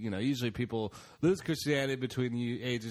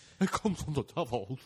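put-on timid lion voice. Joking about being Satanists, doing a Cowardly Lion voice. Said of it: "That's a cowardly lion saying that".

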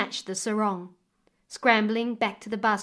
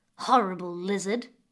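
hissed, nasty, spiteful words; 2 semitones lower than usual. Narrator reading the stepdaughter's words to a baby crocodile, hissing. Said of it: "hissed the girl".

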